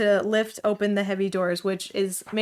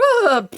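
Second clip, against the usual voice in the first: very high horse voice, pfft pitched way up; 12 semitones higher, 4 dB louder than usual. Retelling a comic scene, voicing the horse Torrent: Torrent horse impression. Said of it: "That's my horse impression".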